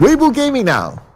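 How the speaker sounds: radio announcer voice. Casting a match alone for viewers, announcing the next team in a radio announcer voice. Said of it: "I feel like a radio announcer".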